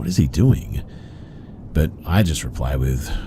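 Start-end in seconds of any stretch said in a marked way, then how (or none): 0.0-0.8 high, puzzled, bewildered, confused tone. Retelling driving past an agitated man, the speaker imitates his dad's confused voice. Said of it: "in a sort of confused voice".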